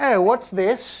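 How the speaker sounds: terrible put-on British accent. Narrating a video, voicing a lady who finally stops, in a terrible british accent. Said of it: "That's my terrible British accent".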